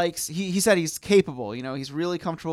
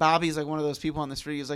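ordinary talk

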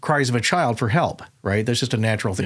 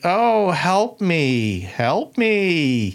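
acted high, very slow taunting, me stretched; 5 semitones higher than usual. Retelling a voice that copied a plea for help and turned mocking: imitating a mocking voice. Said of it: "it gets more mocking".

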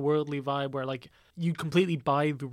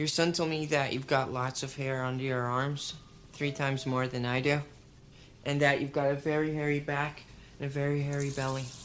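put-on flat, deadpan delivery. Retelling a film scene of a man at a checkup: imitating a deadpan delivery. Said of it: "very like deadpan way".

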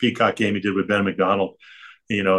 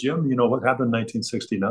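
put-on Irish brogue accent; 3 semitones higher than usual. Retelling a lunch meeting, the speaker quotes a man named Pat: imitating Pat's Irish brogue. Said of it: "this Irish brogue".

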